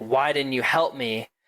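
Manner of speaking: mock angry voice. Recounting a scene where a character's father confronts him, retelling an angry accusation. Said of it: "very angrily like says".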